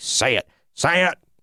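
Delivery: high, pushy, insistent tone, pressing. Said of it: "Vince McMahon wrote that on a paper, like, twenty times and was like".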